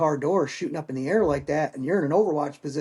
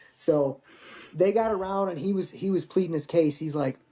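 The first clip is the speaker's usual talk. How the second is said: usual speaking voice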